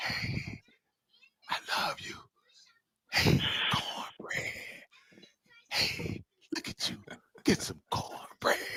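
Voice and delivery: breathy, hushed, very quiet whisper throughout. Retelling a movie scene: imitating Remick whispering. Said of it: "Remick whispered".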